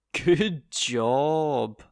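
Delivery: loud, overdone sarcastic emphasis, job drawn out. Explaining sarcasm with a second example phrase: sarcastic overemphasis. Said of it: "by the overemphasis and the tone in which I spoke".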